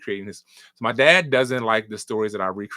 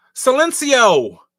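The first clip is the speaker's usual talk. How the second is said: shrill, very high, loud put-on character voice; 7 dB louder than usual. Opening a bit by doing Ryan's voice. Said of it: "when I do Ryan's voice".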